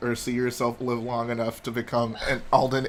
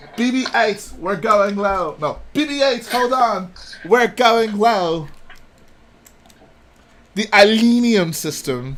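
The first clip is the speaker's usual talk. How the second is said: very high, loud, fake British accent; 9 semitones higher, 5 dB louder than usual. After insisting his accent is perfect, the speaker carries on in a put-on British accent. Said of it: "perfect British accent".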